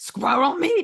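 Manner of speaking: put-on German accent. Retelling what a guy answered about a hot dog, in a German accent. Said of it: "but in a German accent".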